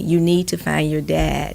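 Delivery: normal talking voice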